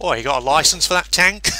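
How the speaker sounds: over-the-top high Cockney. Imagining a British English anime dub, speaker acts out a girl: over-the-top Cockney accent. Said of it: "over-the-top Cockney accents".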